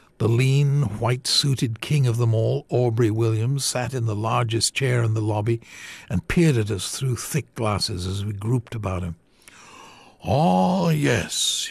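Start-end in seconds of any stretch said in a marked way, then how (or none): 10.3-11.7 lazy, slow, high-pitched drawl. A man in a lobby responds when told about the visitors' trip, drawling. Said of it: "he drawled".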